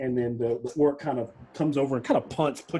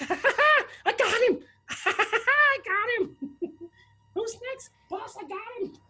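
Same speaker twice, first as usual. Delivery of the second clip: surprised, excited, gleeful goblin voice, higher. Voicing a surprised goblin after a lucky kill: surprised excited goblin voice. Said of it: "the goblin is so surprised, his ears raise, he goes".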